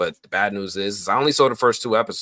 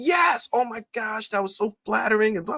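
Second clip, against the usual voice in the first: very high put-on voice going way up into a squeak. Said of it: "I'm doing my best Harold impersonation".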